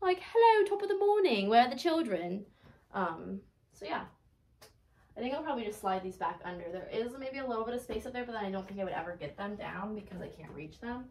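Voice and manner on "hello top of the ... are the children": put-on loud, high British nanny voice. Trying on a Disney Bound outfit with pigtails, in a British nanny voice. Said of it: "I feel like a British nanny when I wear it".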